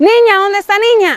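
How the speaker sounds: put-on drunken hollering, pitched high. Retelling how her father came home at dawn calling for the dog: imitating a shouting father. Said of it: "y empezó a gritar".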